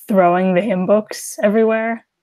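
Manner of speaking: ordinary delivery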